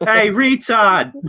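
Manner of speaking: spot-on, high, put-on local Massachusetts accent. Retelling a moment from a movie among friends, in a Massachusetts accent. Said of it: "you just had the perfect Massachusetts accent".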